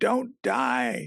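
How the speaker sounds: put-on, very high-pitched, drawn-out wailing cry. Retelling how a man cried out to a dying teacher: imitating a wail. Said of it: "sort of wailed out".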